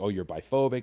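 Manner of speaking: ordinary talk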